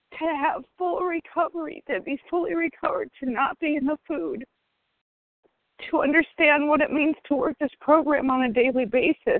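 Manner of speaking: high voice, close to tears, nearly crying. Sharing with her group at an oa meeting, on the verge of tears. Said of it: "I'm sorry, I'm going to cry".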